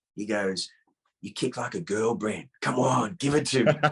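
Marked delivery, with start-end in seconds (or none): 1.2-3.8 put-on whispered, mocking voice. Retelling a friend's taunt after being kicked: imitating Ron Balicki whispering. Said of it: "he comes up to me and he whispers in my ear".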